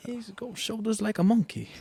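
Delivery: very high-pitched put-on Scottish accent. Joking about a whisky's name, repeating a line: best Scottish accent.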